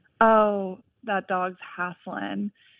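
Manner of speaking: put-on easy, slow Eastern North Carolina Southern accent. Retelling what a college friend said about a panting dog: imitating Haley's Southern accent. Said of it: "in her Southern accent".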